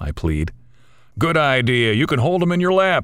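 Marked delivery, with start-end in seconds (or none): 1.2-3.0 mocking, called-out sarcastic shout, high and rising. A narrator reads Dan's reply to Mark's plea, a sarcastic shout. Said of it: "Dan shouts sarcastically".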